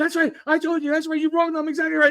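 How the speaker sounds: mock football coach hollering. Retelling how the linebacker coach yelled from the top of the pile: imitating a coach yelling. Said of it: "And he's yelling it".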